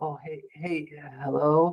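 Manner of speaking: mock just-woken-up voice. Explaining cold calls, imitating someone answering the phone, imitating a sleepy voice. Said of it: "sound like they just got up out of bed".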